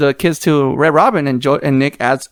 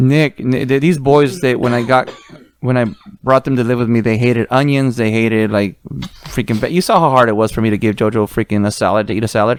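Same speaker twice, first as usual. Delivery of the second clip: normal talking voice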